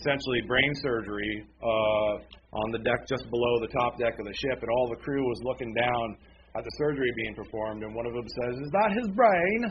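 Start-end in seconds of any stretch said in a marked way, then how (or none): 8.6-9.6 horrible, high-pitched, put-on English accent. Retelling a crew member watching surgery on a ship, in a horrible English accent. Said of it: "And my horrible English accent".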